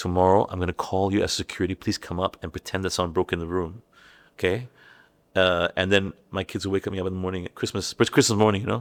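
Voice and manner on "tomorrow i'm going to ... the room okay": ordinary delivery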